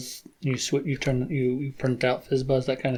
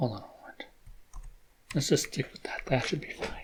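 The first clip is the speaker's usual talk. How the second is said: talking much quieter; 12 dB quieter than usual. Presenter starting a Perl coding walkthrough, talking quietly. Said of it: "so I'm trying to talk quietly".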